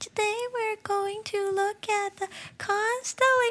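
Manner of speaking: put-on boy's voice pushed very high. Retelling what a boy in class said, imitating his higher voice. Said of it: "he likes to use his higher voice like this".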